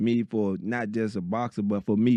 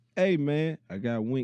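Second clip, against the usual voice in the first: slow, unhurried, easygoing, drawn-out delivery; 4 semitones higher than usual. Retelling how someone announced his friend by phone: imitating his slow talk. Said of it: "You know he talk slow".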